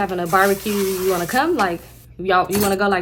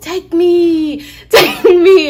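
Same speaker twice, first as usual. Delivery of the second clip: very loud, very slow, high pleading scream; 10 semitones higher, 11 dB louder than usual. Retelling a woman begging her nephew to take her, imitating a screaming plea. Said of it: "She doing all this".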